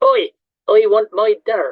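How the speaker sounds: loud, slow, called-out put-on broad Bristol accent. Retelling what a newcomer from Bristol called out: put-on Bristol accent. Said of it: "Excuse my accent".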